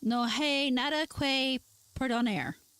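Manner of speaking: Spanish spoken very slowly, drawn out. Trying out a line in Spanish: sounding like Peggy Hill speaking Spanish. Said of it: "I do sound like Peggy Hill".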